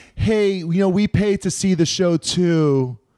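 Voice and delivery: put-on passive-aggressive drawl. Retelling what a guy at a rock concert said, in a mock passive-aggressive tone.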